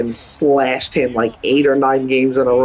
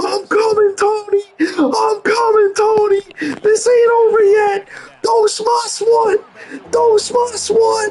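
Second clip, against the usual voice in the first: frenzied, wild, excited, very high-pitched shrieking. Retelling the moment Sammy Sosa drops the ball, acting out going crazy. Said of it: "I start going fucking crazy".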